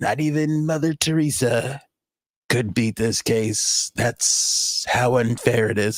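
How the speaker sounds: breathy voice pitched way down. Showing how breathy his way of talking has become, do a very breathy, low impression. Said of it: "it's very down here".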